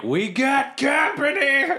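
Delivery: shrill, very high, yelled shout. Playing a character who warns the band: yelling a warning. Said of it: "I'm gonna yell back to the rest".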